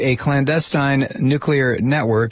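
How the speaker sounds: ordinary delivery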